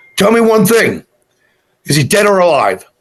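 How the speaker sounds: commanding, authoritative voice. Recalling calling out to a sheriff from his truck, retelling an authoritative demand. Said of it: "so I used a very authoritative voice".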